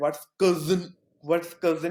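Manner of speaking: mean, demeaning, belittling mocking taunt. Retelling how a teacher mocked the word cousin: imitating a mean mocking tone. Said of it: "He said it in a really, like, mean way".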